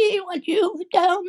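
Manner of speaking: very high, shrill, loud shriek. The witch, shrinking and melting away, screams at the girl. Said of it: "she screamed".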